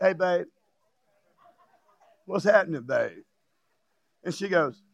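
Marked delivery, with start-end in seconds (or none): 0.0-3.2 playful put-on flirty voice, lower. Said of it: "he called me in and he said".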